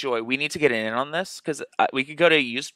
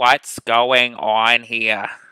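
put-on slow, elderly-sounding old person voice; 3 semitones lower, 3 dB louder than usual. Speaker re-enacts their own confused reaction; old-person voice. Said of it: "I legitimately just sounded like an old person".

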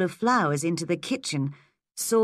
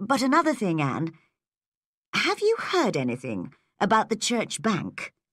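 usual speaking voice

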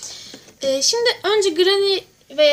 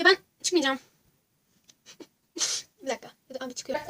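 terrified, fast, frightened back-and-forth babbling; 7 dB quieter than usual. A streamer playing a game talks to viewers, very scared. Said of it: "acayip korkuyorum şu an".

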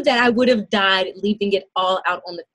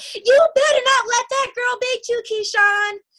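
put-on, shrill, very high hollered scream; 14 semitones higher than usual. Retelling a mother calling from the bleachers during a race: imitating mother screaming. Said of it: "my mother from way up in the bleachers screaming out".

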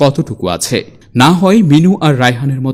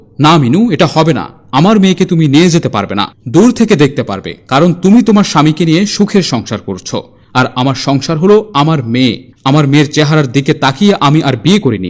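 ordinary delivery, nothing marked

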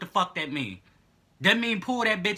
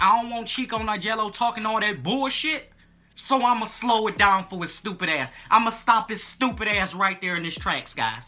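plain

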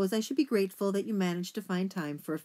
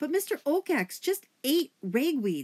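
sudden, high, blurted-out outburst; 7 semitones higher, 4 dB louder than usual. Poppy, unable to find words at first, finally speaks to the others: blurted out. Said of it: "Poppy blurted out".

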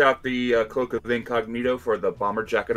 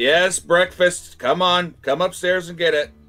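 loud yelling, shouting; 7 semitones higher, 5 dB louder than usual. Calling others up for breakfast from upstairs: yelling from upstairs. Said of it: "Daenerys yells".

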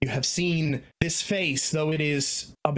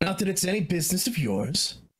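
sharp, curt, brash, harsh character voice; 4 semitones higher than usual. Voicing a character who brushes off a question: brash voice for the character. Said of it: "a brash".

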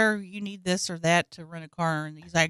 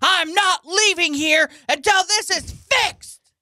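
play-acted, very high, slow, drawn-out, escalating rant; 9 semitones higher than usual. Retelling the customer demanding a fix, imitating an angry customer ramping up. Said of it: "started ramping it up again".

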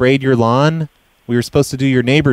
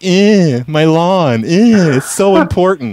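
very slow, whiny, blubbering fake crying; 4 semitones higher than usual. Mocking the other speaker crying to his wife about the lawn: mocking whiny crying imitation. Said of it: "I hope you go in there and cry to your wife".

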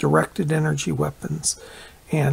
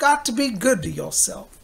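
put-on Southern gentleman's accent, pitched up; 6 semitones higher than usual. Speaker quotes an uncle's repeated advice, doing Uncle Alvin's Southern accent. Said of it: "He had a Southern accent".

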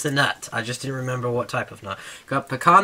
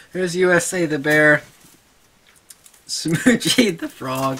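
cracking up, laughing through the words mid-sentence; 3 semitones higher than usual. Listing beanie babies while someone keeps coming back in, cracking up. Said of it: "I'm sorry, I'm cracking up".

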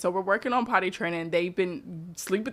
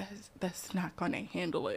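put-on dramatic child voice, quieter; 10 dB quieter than usual. Retelling a child's complaint about a capful of water: imitating a dramatic child.

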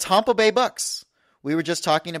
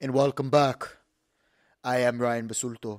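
awful, badly done, dead-level flat monotone; 5 semitones lower, 4 dB quieter than usual. Welcoming listeners back to the show: worst Terminator impression ever. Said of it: "this is the worst Terminator impression ever".

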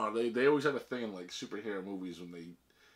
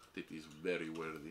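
bad fake Russian accent, pitched low; 4 semitones lower, 9 dB quieter than usual. Speaker talks with another about seeing a film on opening day, crappy russian accent. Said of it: "I can't stop talking in this crappy Russian accent".

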